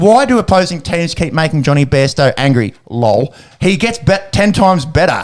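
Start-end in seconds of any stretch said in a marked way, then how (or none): none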